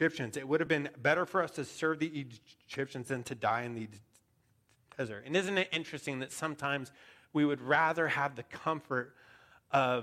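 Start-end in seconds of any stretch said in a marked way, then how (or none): none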